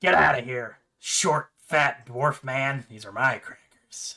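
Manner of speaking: very slow, drawn-out little talking-rat voice. The rat bites the dwarf's finger over crackers; rat character voice. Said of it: "and as you take out the rat, / Well, isn't he so cute in his little suit? / Well, isn't he so cute in his little suit?".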